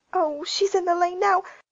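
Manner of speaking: gasped out, very high. Prissy, looking out the window, warns Stephen and Rosanna, gasping. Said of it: "she gasped".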